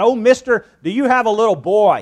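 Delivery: sudden, high, loud blurting out. Staring up at Mr. Lowry, who answered the door, blurted out. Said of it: "he blurted out".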